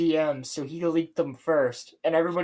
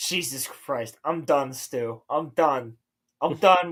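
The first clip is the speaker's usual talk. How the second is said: mock completely done, slow, fed-up exasperation; 3 semitones lower than usual. Imitating Gundam quitting in a video: imitating Gundam fed up. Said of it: "he just goes".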